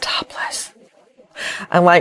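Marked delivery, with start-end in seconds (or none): 0.0-0.7 word spoken in a whisper. Retelling what a son said, the speaker whispers the word topless. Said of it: "He whispered the word topless".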